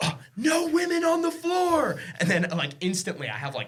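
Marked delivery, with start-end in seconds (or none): 0.0-2.0 very high, slow, drawn-out shout. Recounting starting a bit his buddies joined in on, retelling shouting. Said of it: "I just started shouting. I was like".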